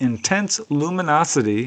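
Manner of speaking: usual speaking voice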